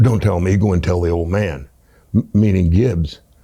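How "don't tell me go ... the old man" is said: mock deadpan, almost angry, much lower. Retelling a man's almost angry answer to you, retelling a deadpan reply. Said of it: "He was completely deadpan".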